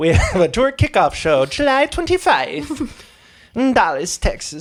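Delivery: tiny, very high little gnome voice. Announcing a tour kickoff show, speaking in a little gnome voice. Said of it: "Sound like a little gnome".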